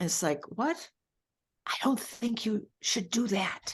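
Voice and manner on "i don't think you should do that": small, soft whispering voice. Describing a little voice over here, imitating a whispering voice. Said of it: "this very whispering voice saying".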